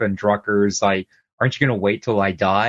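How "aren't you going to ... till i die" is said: plain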